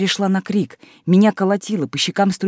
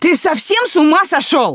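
shrill, high-pitched, loud shouting; 9 semitones higher, 5 dB louder than usual. A daughter yells at her father as he pulls the belt from his trousers, shouting. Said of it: "закричала я".

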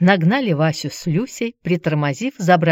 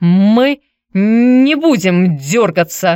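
halting stammer in a raised voice; 3 semitones higher, 7 dB louder than usual. A man under threat assures his captor they will stay still, stuttering. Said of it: "ты вроде заикаться начал".

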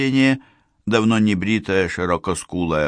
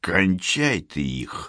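low, hoarse, husky, offhand and matter-of-fact; 4 dB quieter than usual. Narrator reads a woman's order as she comes up to the boat, in a low husky voice. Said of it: "низким хрипловатым голосом сказала женщина".

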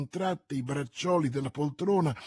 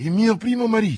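startled, loud, high-pitched exclamation; 6 semitones higher, 8 dB louder than usual. A lady answers her brother-in-law's remark about her first husband, exclaiming. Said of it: "Esclamò Milady guardando Lord de Winter con occhi spauriti".

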